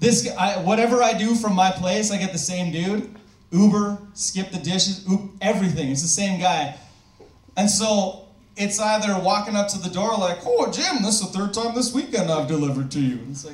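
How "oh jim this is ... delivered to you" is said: usual speaking voice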